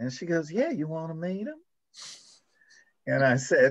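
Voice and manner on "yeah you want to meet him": put-on cute little Southern accent, higher. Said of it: "with a cute little Southern voice".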